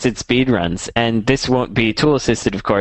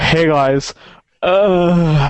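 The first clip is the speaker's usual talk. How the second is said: mock teenage voice, higher pitch; 4 semitones higher than usual. Mocking a fourteen-year-old gamer posting videos: imitating a fourteen-year-old kid. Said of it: "another fourteen-year-old kid being like".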